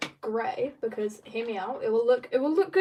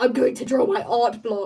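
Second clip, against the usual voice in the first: the most violent voice, loud; 6 dB louder than usual. Retelling own reaction to art block, imitating own most violent voice. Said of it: "the most violent voice ever".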